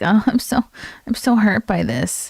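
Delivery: fake wounded tone, phony and overdone. Mocking a woman on screen as phony: mock phony hurt. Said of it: "it's all so phony".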